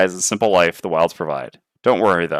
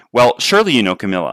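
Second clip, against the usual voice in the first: ordinary delivery, nothing marked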